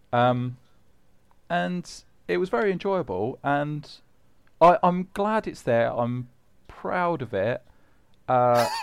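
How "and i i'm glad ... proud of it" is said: halting, unsure, hesitant, not-quite-convinced delivery. Speaker talking about a list his team made, sounding unsure. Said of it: "you sound unsure".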